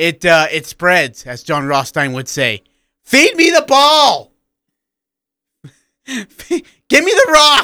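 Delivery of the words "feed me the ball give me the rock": mock, shrill, very high, drawn-out courtside scream. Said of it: "we both screamed".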